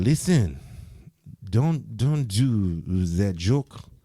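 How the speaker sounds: put-on Haitian-accented voice. Retelling men who brought him next to a car, in a Haitian accent. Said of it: "they got that Haitian accent".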